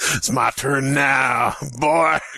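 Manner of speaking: put-on Southern American accent. Telling a story where a console steps from the shadows, Southern Xbox One voice. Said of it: "Why is the Xbox One Southern?".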